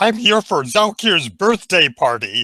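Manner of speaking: high, squeaky, small put-on disguise voice. Narrator voices your character answering an astonished guard, in a high squeaky voice. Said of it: "you say in a high, squeaky voice".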